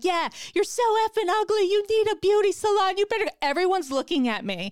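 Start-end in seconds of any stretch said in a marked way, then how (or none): 0.0-3.3 very high, unhinged lunatic shriek. Retelling a confrontation with a woman outside a salon, reenacting her own screaming. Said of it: "screaming like a lunatic".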